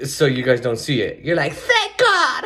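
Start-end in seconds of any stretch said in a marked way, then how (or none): 1.5-2.4 put-on, very high girl voice. Voicing what the audio listeners would say, girl voice. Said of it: "that's my girl voice".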